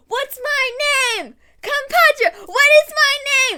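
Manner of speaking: very high-pitched, loud yelling. Act out two people calling back and forth across a room at New York Comic Con, retelling their yelling. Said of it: "they're just yelling".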